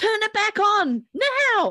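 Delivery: high, slow, loud yell. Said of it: "And I yelled".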